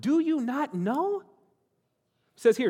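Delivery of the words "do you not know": mock exasperated frustration, slow and pitched up. Preaching on a repeated phrase, the speaker acts out the apostle's holy frustration. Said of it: "the holy frustration in his voice".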